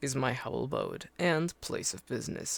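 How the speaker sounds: deep put-on voice. Game narrator voicing the dealer Pernched greeting a traveler: deep voice. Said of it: "I'll just do another deep voice".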